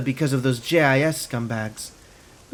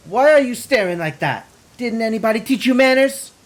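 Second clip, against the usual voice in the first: thick, rapid-fire, high-pitched put-on Filipino accent; 7 semitones higher, 4 dB louder than usual. A woman scolds you for staring at her, in a thick fake Filipino accent. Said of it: "fires off a rapid-fire reproach in a thick Filipino accent".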